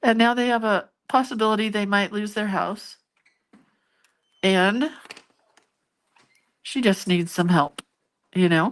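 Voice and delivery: voice on the verge of crying. Telling of a single mom who needs help, holding back tears. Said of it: "Although it's already coming".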